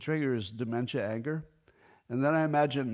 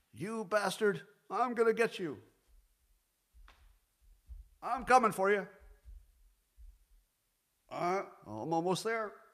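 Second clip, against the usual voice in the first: combative, attacking taunt with the voice pitched up; 8 semitones higher than usual. Imagining a debate, Biden charging at Trump: Biden impression. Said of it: "I'm gonna give my own Biden impression".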